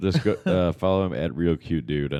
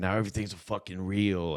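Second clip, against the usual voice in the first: going-off, complaining rant; 4 semitones higher, 6 dB quieter than usual. Retelling a friend complaining about comedy reels: imitating Dale ranting. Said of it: "he was, like, going out on them".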